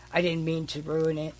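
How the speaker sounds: usual speaking voice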